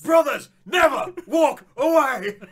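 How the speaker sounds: very high, very loud, very slow, booming, drawn-out bellow. Imitating a film character yelling at his brother: Gerard Butler voice. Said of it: "Is it something like that?".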